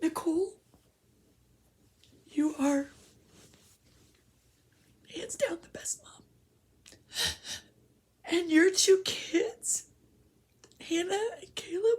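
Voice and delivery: very high, emotional, choked-up voice catching in the throat. Praising nicole as the best mom, getting emotional. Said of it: "I'm gonna get emotional".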